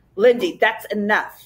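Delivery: plain reading voice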